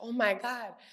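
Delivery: mock, overly dramatic distress. Retelling own reaction after coming back from the bathroom: imitating being overly dramatic. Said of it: "I'll be real dramatic".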